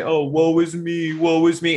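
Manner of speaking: very high, very slow, drawn-out fake sobbing. Recalling how their father teased them for self-pity, imitating his mock crying. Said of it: "he'd kind of do this pretend crying thing".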